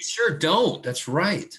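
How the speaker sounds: put-on affected tone. Answering a student about moving the quiz date, affected tone. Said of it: "I don't know why I'm affecting this tone".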